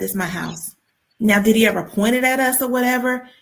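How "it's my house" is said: muttering under the breath, quieter. Retelling how her mother's husband walked around with a rifle: imitating someone mumbling under his breath. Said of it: "mumbling under his breath".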